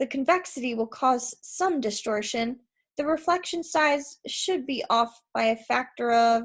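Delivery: ordinary delivery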